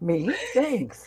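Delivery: caught off guard, startled, shocked. Retelling own reaction to being called best co-host: imitating own shocked reaction. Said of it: "I was shocked".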